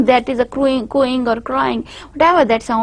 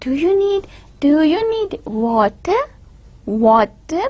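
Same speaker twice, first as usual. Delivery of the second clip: slow, exaggerated, word-by-word speech; 3 semitones higher than usual. Speaker demonstrating how adults talk to young children, slow, exaggerated child-directed speech. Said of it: "We speak slowly ... word by word, exaggerations, changes in pitch and loudness ... I'm stressing".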